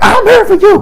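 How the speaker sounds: very high, loud scream.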